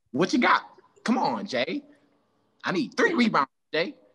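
high, sing-song calling voice. Asked for an impersonation of a coach, imitating Coach Judd. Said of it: "give me the Judd impersonation".

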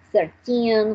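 put-on thirteen with stress on the second syllable -teen. Lesson on where the stress falls in English numbers, stress on teen in thirteen. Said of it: "From number 13 to 19, we are going to emphasize in 10".

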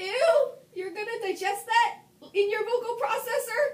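very high, shrill, very loud shouting. Reading a story, a character reacts to a soda bottle being held up, shouting. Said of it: "Shouts Siren".

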